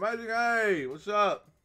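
talking with mouth full. Speaker greets viewers on camera while eating grapes, talking with mouth full. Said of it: "Sorry, I'm eating grapes".

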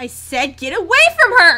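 enraged, furious bellow at very loud full volume. Repeating an order to someone standing over her, in an angry shout. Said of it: "Why are you so angry?".

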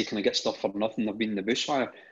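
ordinary talk, nothing marked

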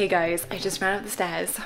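short of breath, puffing, winded voice. Vlogger greeting viewers after running up the stairs, out of breath. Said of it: "so I'm out of breath already".

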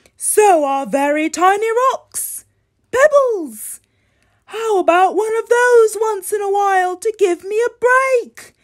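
weary, worn-out delivery. Voicing Grey Crayon, who signs off as your very tired friend, very tired Grey Crayon. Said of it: "Your very tired friend, Grey Crayon".

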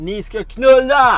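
put-on very loud, high-pitched drunken shout. Recounting a drunk man shouting as a woman walked in, retelling a shout. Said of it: "Och han skrek".

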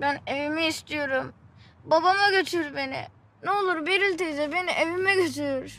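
sobbing, pleading tone. A child begs an aunt to take them home, crying, pleading. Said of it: "Ağlama ne olursun".

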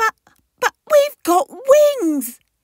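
bewildered, puzzled, very high-pitched outburst. The youngster answers Dad about what kind of creature they are: puzzled exclamation. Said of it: "exclaimed the puzzled youngster".

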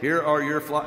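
put-on robotic delivery. Recounting a daily routine of delivering flowers to a partner, imitating a robotic voice. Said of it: "Very robotic voice".

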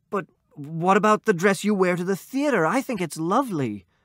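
high, halting, stumbling stammer. A husband answers his wife, stammering. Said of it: "He stammered".

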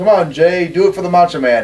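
light, jokey, teasing yell. Recalling yelling to a performer from the crowd, retelling a yell. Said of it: "I yelled".

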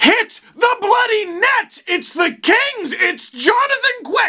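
very high, stretched-out, drawn-out yell. A speaker ranting about the Kings' play, yelling. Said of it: "You see how I'm yelling?".

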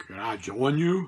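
put-on gruff old man's voice. Retelling how Bear Bryant asked to join a player at dinner: gruff old voice. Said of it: "gruff old voice say".

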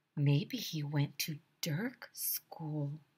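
soft, slow, unhurried whisper. Narrator reading Ryan's answer to Michael's question, whispered. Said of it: "whispered Ryan".

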